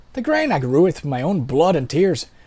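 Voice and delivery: sing-song put-on Irish brogue. Voicing a game character who has one line to say, in an irish accent. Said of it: "Let's go back to Irish for him".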